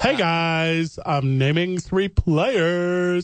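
very slow drawl with guys stretched long. Mocking a co-speaker by imitating how they talk: impression of the other speaker. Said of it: "do you wanna see my impression of you?".

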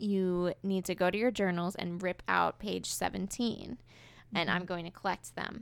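normal talking voice

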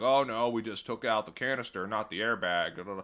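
put-on Southern accent. Retelling what the car repair guy said at pickup, in a Southern accent. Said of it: "are you just doing like a Southern accent".

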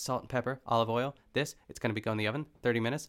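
rapid, rushed, rattled-off delivery. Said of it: "she said so much in so little time".

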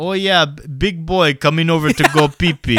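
fake, put-on Russian accent. Retelling how they got someone scared of the dark to go pee: put-on Russian accent. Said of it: "I put on a Russian accent".

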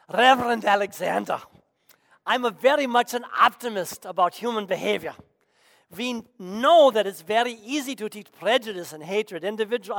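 put-on thick, heavy Polish accent. Speaker recounts what an 84-year-old doctor told him, in Samuel Oliner's thick Polish accent. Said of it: "with his thick Polish accent".

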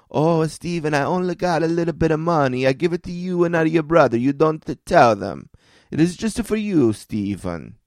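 thick, put-on Italian accent. Retelling a grandmother begging him not to tell his brothers: Xenia's Italian accent. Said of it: "with her classic Italian accent".

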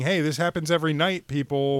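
ordinary talk, nothing marked

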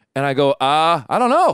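plain

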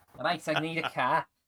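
Liverpool accent. Chatting about how people say car, slipping into a Scouse accent. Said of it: "I'm starting to be Scouse".

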